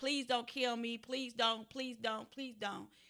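pleading, repeated desperate begging. Retelling how a woman begged a man holding a gun, imitating someone pleading. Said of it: "she would beg and be like".

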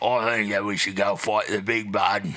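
put-on, laid-on Cockney English accent. Showing off the English voice they put on, Jason Statham Cockney accent. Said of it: "I also do the same thing in an English accent, which is like Cockney".

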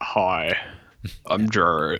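ridiculously deep radio-announcer voice. Imitating a podcast host said to have a radio guy voice: imitating a ridiculously deep voice. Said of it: "Does he sound like this?".

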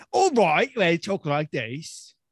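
put-on, fake British accent. Hosts agree to begin the episode in British accents; speak in a fake British accent. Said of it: "Should we just speak in British accents?".

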